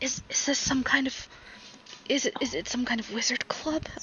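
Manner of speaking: hushed whisper, stumbling and tripping over words. In a role-play scene, a character whispers over to Zaris, whispering. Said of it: "whispers over to you".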